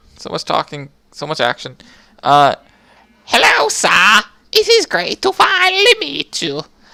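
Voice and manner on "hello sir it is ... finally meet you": very high, shrill, swooping, ear-splitting put-on voice. Playing a game, voicing a character greeting the player, deafening character voice. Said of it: "You're probably going deaf from that voice".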